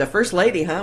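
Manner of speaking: ordinary talk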